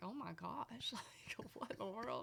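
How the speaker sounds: soft, hushed, incredulous whisper. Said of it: "I'm like".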